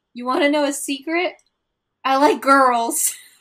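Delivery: put-on drunken voice. Retelling a moment from Kristen: imitating drunk Kristen. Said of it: "she's like drunkenly like".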